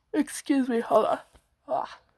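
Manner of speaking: words stretched out through a yawn. Having just woken up, pausing mid-talk, yawning. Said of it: "sorry, yawning".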